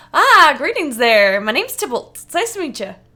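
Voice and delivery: friendly shopkeeper voice, high, loud, bright, booming. Game master voicing the shop owner greeting arriving customers, friendly halfling Tybalt voice. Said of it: "the friendly owner, the halfling owner, and he goes".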